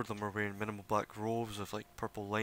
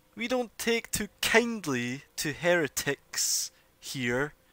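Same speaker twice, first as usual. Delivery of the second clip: stern, very loud elf woman voice; 8 semitones higher, 8 dB louder than usual. The narrator voices an unseen elf approaching the party: stern female elf voice. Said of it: "a female voice sternly saying".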